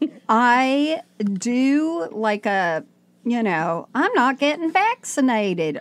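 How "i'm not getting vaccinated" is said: Southern accent, done on purpose. Speaker demonstrating the southern accent she does, put-on southern accent. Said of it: "I do a Southern right".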